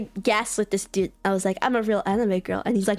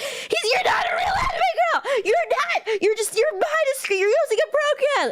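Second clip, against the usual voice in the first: mock furious, very high angry yelling. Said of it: "genuinely red in the face".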